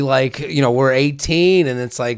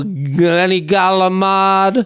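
over-the-top put-on accent, higher; 5 semitones higher than usual. Mocking a pronunciation for a co-host, flamboyant Italian-American accent. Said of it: "Galamad is flamboyance to an amazing degree".

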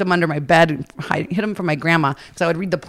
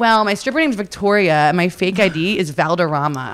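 usual speaking voice

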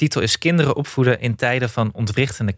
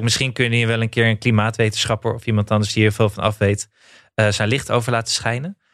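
ordinary talk

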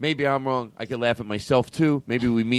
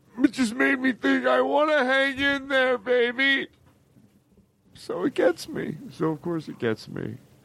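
crying through the words, very high and tearful; 12 semitones higher than usual. Telling about the hang-in-there cat poster, crying while talking. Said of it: "And I'm not sorry that I'm crying".

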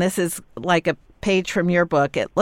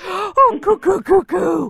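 put-on very high, slow cooing baby talk; 13 semitones higher than usual. Grandparent showing how they talk to a baby, very high baby talk. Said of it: "my voice got very high".

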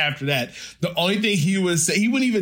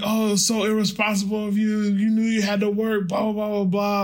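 mock scolding, much higher; 5 semitones higher than usual. Retelling how a man yelled at the speaker on the phone, mock-berating. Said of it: "like berating me like if I was his kid".

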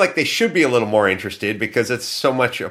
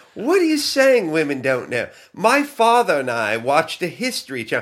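high-pitched fake English accent. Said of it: "I'll try to do her fake accent".

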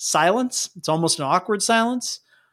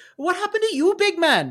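very high-pitched, put-on Irish accent; 11 semitones higher than usual. Retelling what she said to him, in an Irish accent. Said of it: "It was very, very Irish the whole way through".

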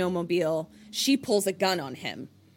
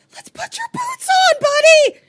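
terrified voice, very high and very loud; 12 dB louder than usual. Retelling a scene where she approaches him holding a bat: imitating a terrified voice. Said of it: "very obviously terrified".

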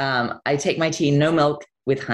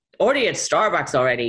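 clumsy, bad put-on Nebraska accent. Describing people in New York: bad Nebraska accent. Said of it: "that was a bad Nebraska accent".

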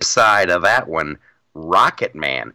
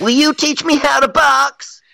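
put-on angsty teen voice, higher pitched; 3 dB louder than usual. Mocking a show's young hero, put-on angsty young Bruce Wayne. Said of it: "and I'm full of angst".

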